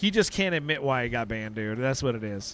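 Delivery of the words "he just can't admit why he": plain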